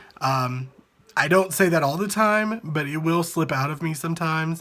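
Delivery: ordinary talk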